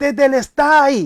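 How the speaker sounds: loud, forceful shout. Retelling how tetelestai was cried out as a victory cry, shouted loudly. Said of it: "Y lo grita así, ... o sea, fuerte así".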